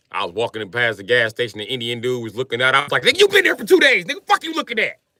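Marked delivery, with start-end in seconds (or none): 3.0-4.9 mock furious, high, angry snap. Retelling snapping at a man looking out from a gas station: imitating own angry snap. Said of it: "I was mad at everybody".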